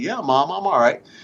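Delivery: play-acted dazed, groggy, half-awake voice. Retelling answering his mom on the sidelines, imitating a groggy reply. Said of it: "saying kind of groggily".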